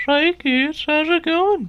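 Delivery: very high, loud, belted cartoon voice. Describing an impression that came out without trying, doing Herbert from Family Guy. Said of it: "try to sound like".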